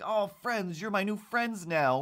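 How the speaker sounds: put-on excited, high-pitched, thick New Zealand accent. Retelling a small child who wanted to be their new friend, imitating an excited kid. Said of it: "he was just so excited to just be like".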